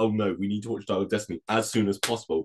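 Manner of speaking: ordinary talk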